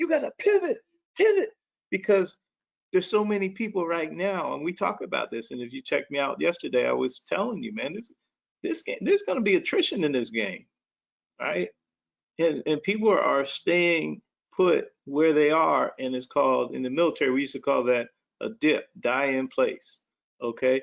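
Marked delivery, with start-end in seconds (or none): 0.0-1.5 high, hyped, excited yelling. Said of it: "And I would start yelling".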